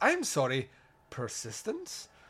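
attempted Irish accent. Speaker reading out what the Reverend wrote, best Irish accent. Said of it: "I'm doing my best Irish accent".

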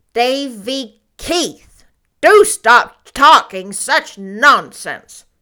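stern, very loud, deliberate and drawn-out severe tone. Reading a story aloud, a woman answers a boy, severely. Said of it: "said Marilla severely".

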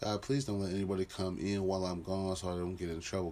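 normal talking voice

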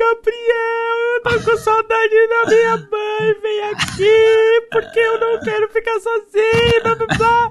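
very high tearful sobbing, aqui stretched out. Telling a friend what a guy will do mid-training, the speaker imitates him crying.

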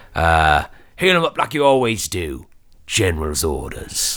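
orc-like put-on voice. Recreating the voice Lork hears at the end of the episode, orcish voice. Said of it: "Sounds like a lot very orcish".

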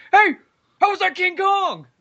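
mock very high shout, sounding from far off. Retelling how a guy shouted at you from way down the parking lot, retelling a distant shout. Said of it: "just shouting from, I mean, like, way down the parking lot".

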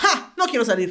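put-on offended, indignant tone. Retelling refusing to go out and play: imitating own past indignant tone. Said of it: "me hice la indignada".

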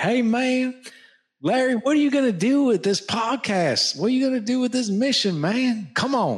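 imitated Southern American accent. Imitating a podcast guest from Nashville, in a Southern American accent. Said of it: "He's got this really cool Southern accent. ... That's literally how he talks".

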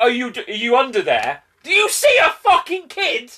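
loud, rising, mock searching call. Retelling a cameraman searching under a table: loudly imitating a cameraman. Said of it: "Volume, babe. The window's open".

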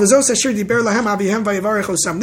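ordinary talk, nothing marked

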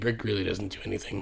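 whispering. Saying an aside that someone should not overhear: whispering. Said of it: "I had to whisper that part".

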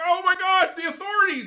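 acted, very high, loud, frantic freak-out. Retelling a skit where a zombie panics after a guest dies: acting out freaking out. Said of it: "He's freaking out".

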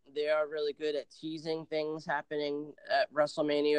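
ordinary delivery

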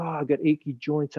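ordinary talk

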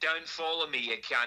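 Aussie-accented voice. Retelling a reply to people who report videos: Australian accent. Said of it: "of an Australian".

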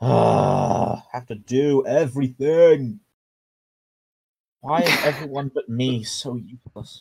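put-on very drawn-out, slow, sulky, bratty teenage whine. Playing a character complaining while two others fight a big guy; bratty teen whining. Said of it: "You sound like you sound like such a bratty teen".

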